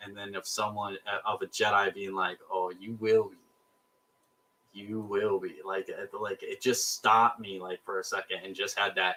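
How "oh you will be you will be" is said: put-on deadpan puppet voice. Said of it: "that dead seriousness".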